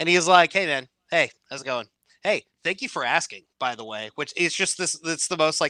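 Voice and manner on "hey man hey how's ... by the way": put-on passive-aggressive tone. Retelling a video of John Cena answering a live-streamer: imitating passive-aggressive John Cena. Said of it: "passive-aggressive ... version of John Cena".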